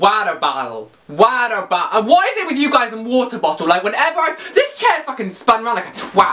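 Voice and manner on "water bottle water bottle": slow, attempted, put-on American accent. Speaker trying out different accents, now attempting an American accent. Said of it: "I'll try an American as well".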